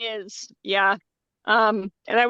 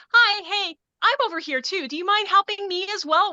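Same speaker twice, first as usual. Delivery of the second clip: friendly but pointed, slightly raised voice; 9 semitones higher than usual. Showing the tone for asking to be helped too: voice raised a little, still friendly. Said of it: "that tone of like ... When you kind of raise your voice just a little, but you keep it friendly enough".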